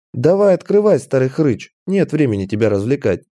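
plain

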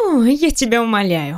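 brash, self-assured, slow dismissive scoff with a snort. A woman brushing off a man's claim that he is married, snorting. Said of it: "Фыркает девушка".

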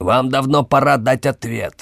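sharp, high-pitched bark, composure audibly cracking. An emperor losing his composure, demanding an answer, barked. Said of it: "рявкнул император Вальририи".

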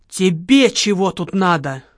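acted-out hiss. Retelling how a woman spotted him and hissed at him, retelling a hiss. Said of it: "Да как зашипит!".

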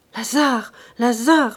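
murmuring in terror. A woman facing a furious man murmurs his name in terror. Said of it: "murmura-t-elle épouvantée".

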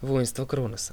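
plain

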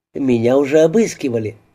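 plain reading voice

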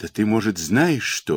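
usual speaking voice

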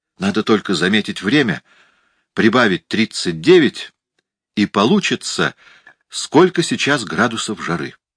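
ordinary talk

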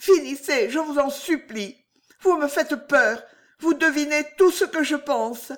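quavering, tremulous, trembling high-pitched voice. A woman begs the gentleman flattering her to stop, in a trembling voice. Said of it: "fit-elle d'une voix tremblante".

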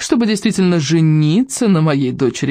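ordinary delivery

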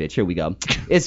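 ordinary delivery

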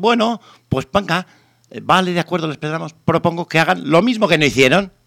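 condescending, mocking sarcasm in a high, sneering tone. Retelling what the woman who replaced them said at the meeting, retelling a mocking remark. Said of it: "Y con sorna".

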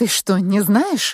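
surprised, astonished, amazed. Asked who a famous athlete is, the narrator answers the one who asked, surprised. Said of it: "удивилась я".

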